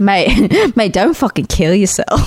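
put-on Australian accent. Asked which accents they can do, the speaker tries an australian accent. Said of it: "To give us Australiana Bay".

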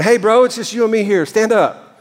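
put-on casual New Orleans accent. Retelling a Bible scene in a playful version: New Orleans flavored casual voice. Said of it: "I just can imagine Peter going".

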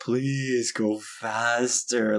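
play-acted, pleading, begging voice. Retelling gesturing at a slow driver ahead: imitating own pleading. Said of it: "pleading with them".

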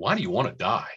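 condescending, patronizing, judging tone. Speaker shows the wrong way to ask why someone wants to die, condescending, judgmental. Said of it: "A condescending, judgmental statement like".

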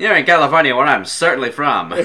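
put-on pronounced, nasal, old-time mid-Atlantic accent. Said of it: "my pronounced nasally mid-Atlantic accent".

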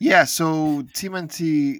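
voice breaking. Asked to give the movie plots, the speaker begins; voice cracking. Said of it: "My voice cracked there".

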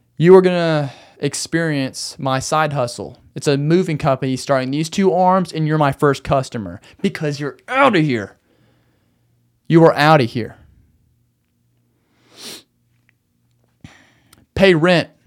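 really stern, severe, very slow and deliberate. Rehearsing a rent reminder to send to someone who hasn't paid, really stern. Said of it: "I need to be really stern".

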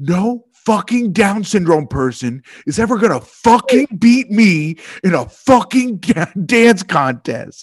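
mock yelling, a loud put-on shout. Retelling a man's outburst in a restaurant, imitating a loud shout. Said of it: "so loud in the restaurant".

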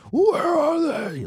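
mock furious, shouty, very high-pitched angry shout. Speaker praising the Michael Keaton version, mock-angry Michael Keaton shout. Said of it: "when he's like angry and trying to become like the knight".

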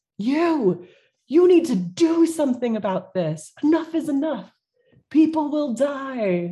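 mock high furious crowd screaming, die drawn out. Game narrator voicing a crowd that screams at an official approaching the players, crowd screaming at her. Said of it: "are screaming at her like".

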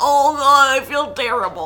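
hoarse, raspy sick voice breaking up. Imitating a cat after puking: imitating a cat's cracking voice. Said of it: "his voice cracks and everything".

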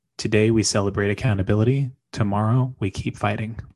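plain

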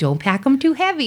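put-on elderly woman voice. Recounting what they say to the bag person: old lady voice. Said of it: "like, an old lady go".

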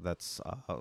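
plain

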